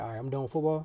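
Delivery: ordinary delivery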